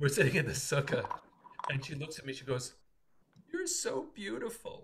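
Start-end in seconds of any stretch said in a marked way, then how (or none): 3.5-4.8 imitated fake crying, higher pitch. Retelling a daughter's imitation of her father: imitating someone fake crying. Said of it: "pretends to be crying".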